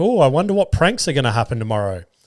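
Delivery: normal talking voice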